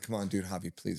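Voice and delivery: acted, exasperated, impatient begging tone. Retelling waiting to step on the scale: imitating own impatient pleading. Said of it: "while you're thirsty and hungry".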